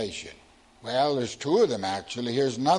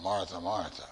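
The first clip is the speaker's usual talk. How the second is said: uninflected, even, flat, level monotone; 6 semitones lower, 9 dB quieter than usual. Showing how Jesus's words could be read simply, in a flat monotone. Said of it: "you can say it in a monotone".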